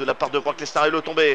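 normal talking voice

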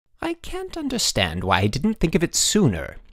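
proud, triumphant, high-pitched, swooping delivery. Narrator reads the headmaster addressing the boys, triumphant declaration. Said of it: "the headmaster declared triumphantly".

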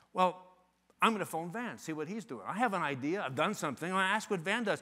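plain

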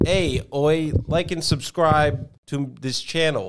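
failed, bad put-on Canadian accent, long pauses. Asked to say the channel sign-off like a Canadian, attempted Canadian accent. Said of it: "You want me to do it like a Canadian?".

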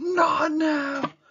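shrill, very high, loud screamed outburst. Retelling what she did during a bad contraction: retelling a scream. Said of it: "she just screams at me".

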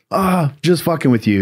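high, distorted way of speaking. Recounting meeting a woman, imitating her distorted voice. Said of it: "in her distorted voice".

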